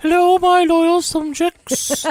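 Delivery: put-on very high, stately, regal queenly voice. Greeting listeners as the podcast opens: Queen impression. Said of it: "Are you doing your Queen impression".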